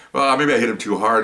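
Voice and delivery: ordinary talk, nothing marked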